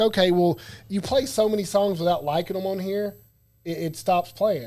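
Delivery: ordinary delivery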